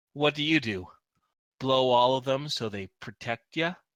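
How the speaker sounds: scowling tone. Voicing a man taunting a player while outnumbered: scowling. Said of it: "With a scowl".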